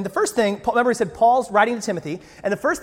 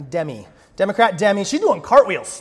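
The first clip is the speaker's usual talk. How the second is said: usual speaking voice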